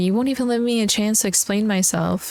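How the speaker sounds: put-on weepy, tearful voice, crying. Retelling own words to grandpa after being told to leave: retelling own crying plea. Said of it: "And I'm crying".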